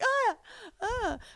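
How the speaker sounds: very high, fake, helpless damsel whimper. Suggesting falling on the bag and lying there: mock damsel in distress cry. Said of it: "laid there like a damsel in distress".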